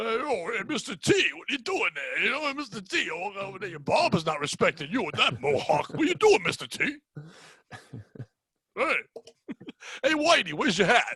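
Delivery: put-on Italian tough-guy voice. A guest shows off the impression done every time: Stallone impression, Italian voice. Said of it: "My Italian voice bemes more and more".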